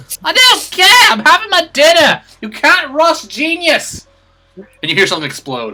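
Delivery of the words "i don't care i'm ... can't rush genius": shouted, high-pitched yelling. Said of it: "the woman shouting at the scientist through the walls".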